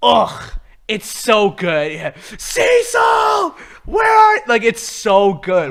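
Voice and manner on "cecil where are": anguished, desperate, very high shout. Retelling a show scene where a character yells for Cecil: imitating a desperate yell. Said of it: "he starts yelling for Cecil".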